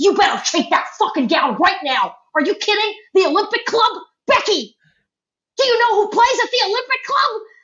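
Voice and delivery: mock screaming rant, very high and rising. Retelling her dad's phone call to her, imitating dad screaming. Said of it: "my dad called me and screamed at me".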